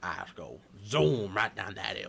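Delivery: put-on light, borderline Cajun accent. Speaker quoting his answer about taking a curve, borderline Cajun accent. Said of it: "zoom with like a borderline Cajun accent".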